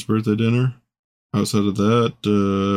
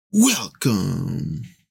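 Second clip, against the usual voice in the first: welcome with heavy, hard, punched stress on w; 2 semitones lower than usual. Imitating the voice in a video intro, stressed W in welcome. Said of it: "super emphasized the W and welcome".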